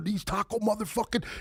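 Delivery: put-on high, panicked, freaked-out outburst. Telling a story about teammates, the speaker imitates one freaking out. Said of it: "and he's freaking out".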